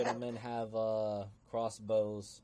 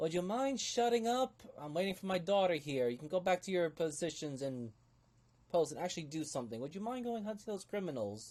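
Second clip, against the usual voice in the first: put-on higher-pitched young woman character voice; 8 semitones higher than usual. Storyteller voicing a woman who cuts off the man speaking, in a younger woman's voice. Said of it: "you do hear a young a younger woman's voice".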